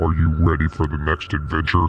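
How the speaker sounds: very low, demonic voice. Narrator reads Sonic speaking at the screen in a demonic Sonic voice. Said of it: "said in a demonic voice".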